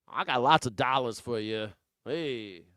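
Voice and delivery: loud, put-on old New Jersey accent. Commenting on a man from New Jersey, Larry Kudlow old New Jersey accent. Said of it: "That's an old New Jersey accent".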